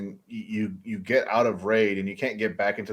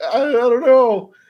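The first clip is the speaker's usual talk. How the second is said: high, loud, slow, nervous stammer; 11 dB louder than usual. Retelling a game story, voicing the listener's confused reply in a Morty voice. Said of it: "Why in your stories I sound like Morty".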